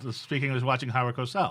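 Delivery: ordinary delivery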